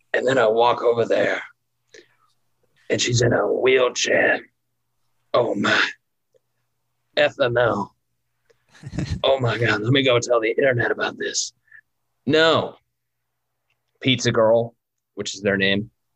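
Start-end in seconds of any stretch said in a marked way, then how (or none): 5.4-11.6 put-on raspy, war-torn voice. Retelling the pizza delivery driver's reaction, in Pizza Girl's raspy, war-torn voice. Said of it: "Who has a raspy, war-torn voice".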